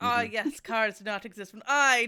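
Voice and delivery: booming character voice at full, very loud volume. Quoting how Dio talks to himself in his head: imitating Dio. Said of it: "'cause he says, like".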